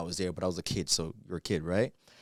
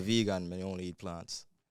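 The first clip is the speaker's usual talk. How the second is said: Jamaican patois accent; 4 dB quieter than usual. Asked to say a phrase in his own accent, jamaican patois accent. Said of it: "say I'm vegan and I only eat plants in your accent".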